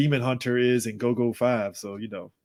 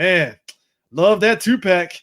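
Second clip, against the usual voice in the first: mock-enthusiastic sarcasm, louder; 6 semitones higher, 5 dB louder than usual. Recalling own reaction to a Hasbro two-pack: retelling a sarcastic remark. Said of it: "very sarcastic about it".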